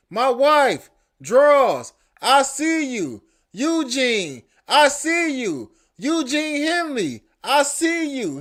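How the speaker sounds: mild, mock, half-shouted taunting call. Telling of a chase, the speaker retells a man screaming at them. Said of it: "He's screaming all that".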